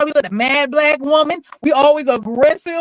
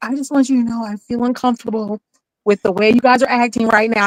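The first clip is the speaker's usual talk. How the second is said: mock whispering, lower; 5 semitones lower than usual. Acting out calmly raising a complaint at work: imitating a whisper. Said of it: "You whispering".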